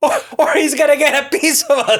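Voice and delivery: high, loud, laughing, mock-menacing voice.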